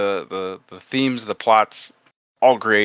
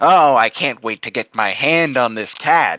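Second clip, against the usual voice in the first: dry, emotionless, drawled deadpan delivery. Retelling a movie scene, mocking a voice actor's line: John Mulaney voice. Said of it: "classic John Mulaney doing his John Mulaney voice".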